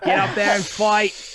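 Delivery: put-on high, loud Bostonian accent. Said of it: "he speaks in a, uh, a Bostonian accent".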